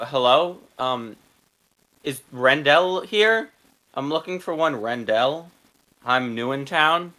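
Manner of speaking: very confused, bewildered, lost-sounding voice. A player's character walks in through the front door, very confused voice. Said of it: "in like a very confused voice".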